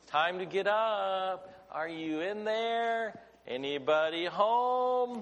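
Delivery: gentle, pleasant voice, spoken very slowly. Speaker acting out waking a child in the morning, pleasant, not loud voice. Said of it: "Have that pleasant voice, not a loud voice".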